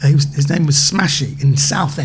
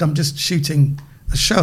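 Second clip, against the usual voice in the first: plain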